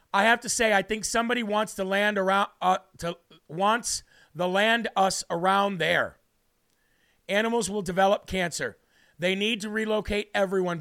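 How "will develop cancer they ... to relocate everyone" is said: ordinary talk, nothing marked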